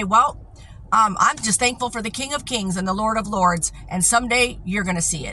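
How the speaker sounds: ordinary talk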